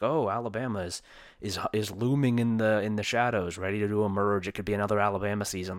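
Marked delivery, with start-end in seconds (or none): none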